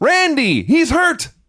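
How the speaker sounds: very high, frantic, urgent yelling scream. Recounting a wrestling match, the speaker acts out the referee, retelling the ref's scream. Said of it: "The ref screams".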